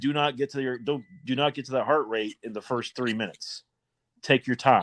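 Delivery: plain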